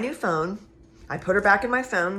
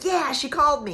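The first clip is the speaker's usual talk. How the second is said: thrilled, eager, excited high-pitched gushing; 8 semitones higher than usual. Retelling seeing a friend's name on an incoming call, retelling being excited. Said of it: "I was so excited".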